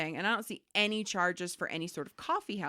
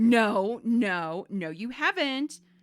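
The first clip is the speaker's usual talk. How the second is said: patronizing, condescending, loud, very slow and drawn out; 3 semitones higher, 7 dB louder than usual. Retelling a bank call, imitating a condescending customer. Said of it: "the customer laughs and says condescendingly".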